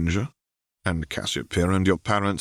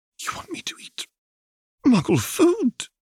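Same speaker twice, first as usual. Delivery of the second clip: horrified, rising squeal, very high. A child replies to Tom, voice rising to a horrified squeal. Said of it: "The poor child's voice rose to a horrified squeal".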